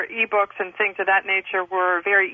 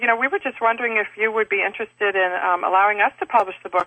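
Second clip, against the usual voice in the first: normal talking voice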